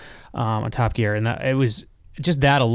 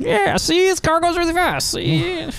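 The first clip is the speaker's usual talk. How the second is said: put-on much higher old-movie Mid-Atlantic gangster voice. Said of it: "Gary Cooper accents from the early cinema".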